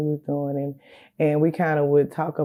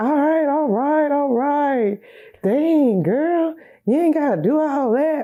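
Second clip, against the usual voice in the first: very high, easygoing, drawn-out laughing it off; 11 semitones higher, 5 dB louder than usual. Retelling his reply while she cried on the floor, imitating him laughing it off. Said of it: "like laughing it off".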